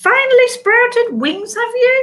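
very high-pitched, bubbly, exuberant voice. Trix the Archaeopteryx greets Scoot from around a tree trunk; high-pitched, exuberant. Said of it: "said the face in a rather high-pitched, exuberant voice".

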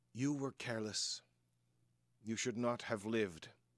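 grave, very stern, severe tone. A storyteller voices a woman speaking to the players' characters, very stern. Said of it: "she says very, very sternly".

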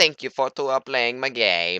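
hammy, bad, high, loud put-on Italian accent. Mid-game, putting on a voice: bad Mario accent. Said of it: "That was a really bad Mario accent".

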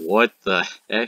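ordinary talk, nothing marked

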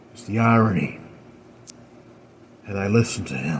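faint, weak, feeble voice. A seated man speaks, looking a woman in the eyes: weakly spoken. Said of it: "the man weakly says".

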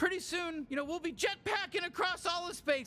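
excited, eager, bubbling-over chatter. Chattering to a partner at bedtime about jetpacks: too loud, excited. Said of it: "I'm being too loud".

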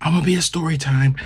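put-on frantic sobbing. Retelling what a woman said as things went wrong, imitating someone crying frantically. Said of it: "she's now crying and frantically like".

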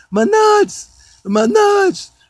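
shrill hollering, very high and very slow. Recounting being whipped at fifteen, acting out his own cries; retelling his own hollering.

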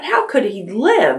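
amazed, startled, astonished, high-pitched. A listener asks, astonished.

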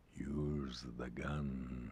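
very low, cold, deep, hushed and intense. A caller on the phone speaks to Frank, in a cold, deep, intense voice. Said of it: "It's [name]. Old [name]. ... Cold, deep and intense".

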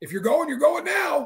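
mock very high, loud, drawn-out yell. Retelling a military dream, quoting a man who yelled at everyone, retelling a man's yell. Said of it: "Like he's yelling at everyone".

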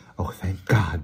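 softly breathed, breathy. Narrator reads a woman's line after waiting until past two in the morning, breathed. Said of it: "breathed Miss Eales".

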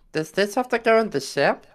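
high breathy cartoon voice.

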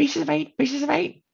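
shrill, very high squawking parrot voice. Listing pirate tropes, imitating the parrot on the captain's shoulder: squawking parrot voice. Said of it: "the parrot on the captain's shoulder, squawking".

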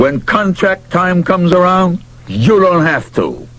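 threatening tone. Reading a baseball story, the narrator voices a character's line, menacing. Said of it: "he said menacingly".

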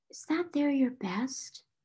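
hesitant, soft, almost whispered voice. Becky asks Sarah about her rose-colored frock: almost a whisper. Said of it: "she asked it almost in a whisper".

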